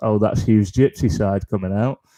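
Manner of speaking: usual speaking voice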